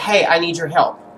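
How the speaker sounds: ordinary talk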